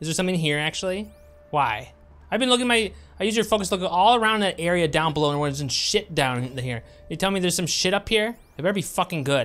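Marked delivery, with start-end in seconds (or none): 7.1-9.4 angry, much higher and louder. A gamer told to look around an area on his birthday, angry. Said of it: "If I sound angry, I am angry".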